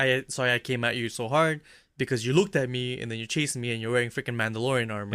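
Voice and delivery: normal talking voice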